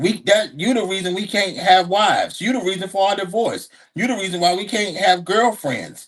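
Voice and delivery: ordinary talk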